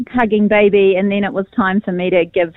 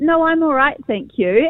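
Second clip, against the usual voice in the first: mock-calm, composed voice, higher pitch; 6 semitones higher than usual. Retelling declining tea offered by the father-in-law, retelling a calm reply. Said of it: "And I just calmly replied".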